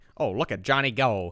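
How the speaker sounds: put-on slow, old-timey 1930s commercial announcer accent. Imitating a man in a thirties commercial: 1930s commercial announcer accent. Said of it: "I can't even do the accent".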